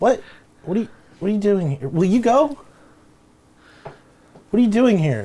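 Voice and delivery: put-on stumbling young teen voice. Voicing a thirteen-year-old kid confronting a player character: voicing a thirteen-year-old kid. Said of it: "thirteen-year-old kid walks up".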